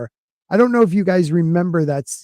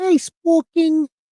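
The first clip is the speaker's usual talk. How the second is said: very high-pitched, put-on British accent; 12 semitones higher than usual. Imitating how a member greets them, in a British accent. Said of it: "is she British?".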